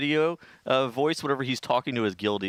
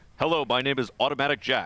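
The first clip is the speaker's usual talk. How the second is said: mock professional caster cadence and delivery. Teasing someone about their speaking cadence, mocking a professional caster's cadence. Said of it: "the cadence that you use".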